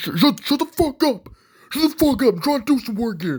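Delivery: very high, unhinged, furious ranting outburst. Imagining him as a fast food worker hearing a baby cry: imitating Joe Pyfer crashing out. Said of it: "would crash out".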